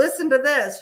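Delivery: high, excited, blurted-out delivery.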